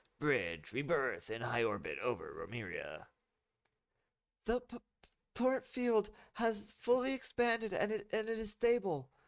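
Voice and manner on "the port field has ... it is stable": shrill, very high-pitched yelling. Narrator reads Kat calling out from her science station on the bridge: yelling. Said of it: "Kat yelled from her science station".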